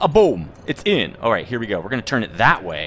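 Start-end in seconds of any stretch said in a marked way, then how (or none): 0.0-1.2 put-on Italian accent, slow and high. Speaker calling a move, trying to sound like an Italian guy. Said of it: "Sound like an Italian guy".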